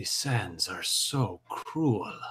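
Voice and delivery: whispered mutter under the breath. Her character looks up at the thing and steps back: whispered mutter. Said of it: "hear her whisper, mutter under her breath".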